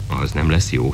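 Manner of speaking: usual speaking voice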